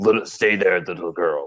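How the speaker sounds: deep big-screen movie voiceover voice. Describing a movie scene, quoting a voice speaking to a girl: deep movie voice. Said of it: "there's this deep voice that's like".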